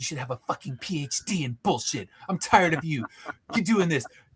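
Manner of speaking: mock-angry rant, acted angry outburst. Retelling what the principal said to them after getting so mad: imitating an angry rant. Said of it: "she would get so mad".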